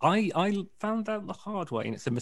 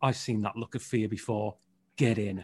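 put-on menacing voice, lower and quieter; 6 semitones lower, 5 dB quieter than usual. Retelling what a taxi driver said at the wrong airport: imitating a menacing tone. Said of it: "the menacing kind of tone at the end".

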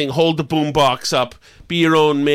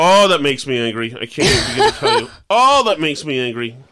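plain

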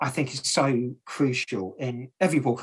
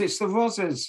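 high, loud landlady-style yell; 8 semitones higher than usual. Retelling a lock-in when the police officer comes in, imitating Beryl yelling. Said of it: "Beryl yells".

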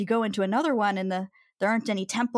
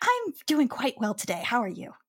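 friendly, pleasant, cheerful dwarf woman voice; 3 semitones higher than usual. Narrating a tabletop game scene as the dwarven woman greets the player, dwarven woman voice. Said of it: "The dwarven woman turns to you and goes".

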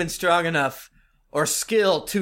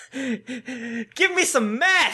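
very slow, high-pitched, drawn-out voice; 7 semitones higher than usual. Joking with the others, imitating the second oldest daughter. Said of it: "here's an impression of the, the second oldest daughter".

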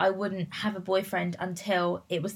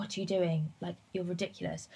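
whispered, quieter; 9 dB quieter than usual. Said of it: "whispering in my ear".

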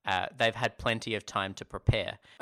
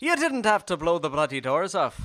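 put-on Irish-sounding actor voice, higher and louder; 7 semitones higher, 5 dB louder than usual. Retrying the famous film line: Michael Caine impression sounding Irish. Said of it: "Why is Michael Caine Irish in yours?".

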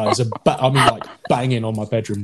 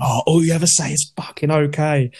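half-shouted, pitched-up mild shout; 5 semitones higher than usual. Retelling shouting at someone while walking upstairs: retelling own past shout. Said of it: "I shouted at him".

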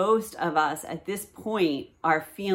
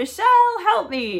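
very high, loud crying out; 13 semitones higher, 7 dB louder than usual. Retelling getting stuck in a mud pit, re-enacting a cry for help. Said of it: "I cry out".

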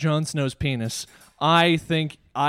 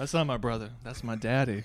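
put-on insinuating voice, lower and quieter; 4 semitones lower, 7 dB quieter than usual. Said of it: "he said it like that with a wink".

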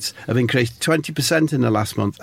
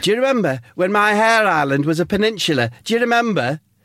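mock shouted, high-pitched, heckling tone; 8 semitones higher than usual. Acting out Steve calling back at the guest: imitating Steve shouting. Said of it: "Steve shouts out".

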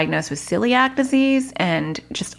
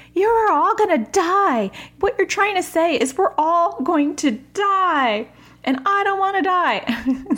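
very high terrified scream, die stretched out; 11 semitones higher than usual. Retelling what she screamed after storm talk scared her, imitating someone screaming. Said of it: "And then she starts screaming".

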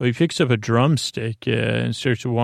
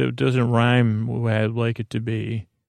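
plain

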